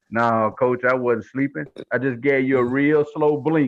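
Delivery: low, mock straight-faced, matter-of-fact deadpan. Retelling a player's answer to the coach: imitating Willie's deadpan reply. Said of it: "looks at him with a straight face and says".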